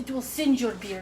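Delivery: put-on Russian accent throughout. Addressing the producer in a bit, with a put-on Russian accent. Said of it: "That was my Russian accent".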